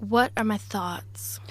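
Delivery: put-on Los Angeles American accent. Podcast host mimics how IJ will sound back from America, imitating IJ with LA accent. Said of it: "that's what you're going to sound like when you come back from America".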